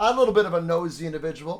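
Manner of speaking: ordinary delivery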